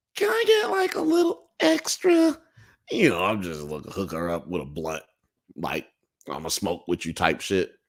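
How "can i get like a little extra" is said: very high, odd, tiny little voice. Retelling what a girl who asked for weed said, in her weird little voice. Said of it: "she had this weird little voice, and she sounded like this".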